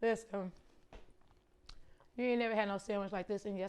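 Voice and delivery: talking with mouth full. Reviewing a sandwich while eating it, talking with mouth full. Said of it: "I'm talking with food in my mouth".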